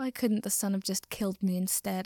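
ordinary talk

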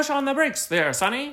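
put-on old-movie North Atlantic accent. Retelling what they told a guy, in an old movie north atlantic accent. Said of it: "North Atlantic accent from movie theaters".

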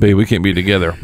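ordinary delivery

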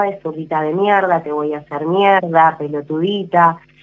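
ordinary delivery

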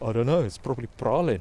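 put-on 'pralin' said in a South African accent. Retelling a guy's answer on how to pronounce praline: South African accent. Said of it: "he speaks with the South African accent".

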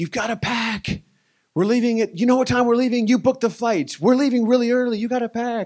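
very high, loud, urgent scolding yell. Retelling how Katie yelled about packing for an early flight: imitating Katie yelling. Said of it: "Katie was literally yelling at me like".

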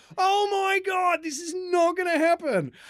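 very high, drawn-out, panicked freaking-out moan. Retelling his hidden reaction behind the scenes of an announcement, acting out freaking out. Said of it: "I'm freaking out".

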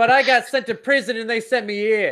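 put-on hint of Boston accent. Improvising a character's backstory, slight boston accent. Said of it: "was that a little Boston?".

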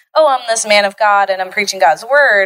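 ordinary delivery

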